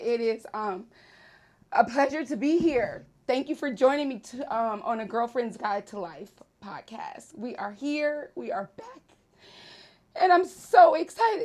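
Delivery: loud, tearful, joyful, crying while talking. Podcast host welcomes listeners back, crying tears of joy. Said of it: "These are um, tears of joy".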